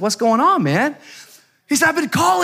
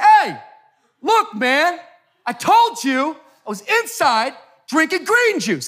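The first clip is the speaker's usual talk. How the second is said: put-on voice raised and pitched up in righteous anger; 7 semitones higher than usual. Retelling how he answered a man going off at him: retelling raising his voice. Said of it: "I raised my voice".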